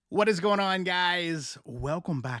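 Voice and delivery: smiling voice. A host welcomes viewers back, with a smiling voice. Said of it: "Can you hear the smile in my voice?".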